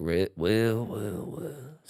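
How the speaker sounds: put-on cowboy voice. Showing another speaker a practiced Red Dead voice. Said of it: "practicing my Red Dead voice".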